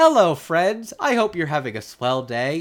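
put-on light, cheerful, sweet, friendly little-boy voice. Describing how an actor plays a teenage character, imitating a sweet little boy. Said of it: "plays him like such a sweet little boy".

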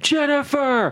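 very high, sudden, drunken-sounding scream, acted out. Retelling a movie scene where a drunk character screams: imitating a drunk character screaming. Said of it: "he just starts screaming".

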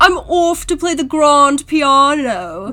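loud upper-class posh British accent, "piano" stretched out. Imitating how he does British accents: upper-class British accent. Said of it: "He's doing upper class British".

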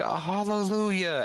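put-on elderly woman's voice, pitched very high. Voicing a very old woman in a chapel: old woman character voice. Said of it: "the old woman, like, goes".

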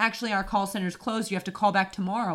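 ordinary talk

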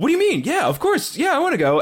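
very high, shrill, swooping defensive tone. Retelling a fight, quoting the guy who got hit, retelling a defensive reply. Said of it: "gets real defensive immediately".

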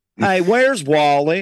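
put-on Southern American accent. Joking about renaming Waldo as Wally, put-on Southern accent. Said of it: "everyone in the South already asked that question".

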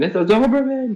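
play-acted very high, shrill, panicked, freaked-out shriek. Describing a video of an old lady panicking over a small dog; imitating her screaming. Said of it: "she's like screaming".

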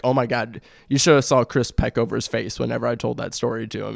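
normal talking voice

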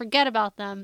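plain

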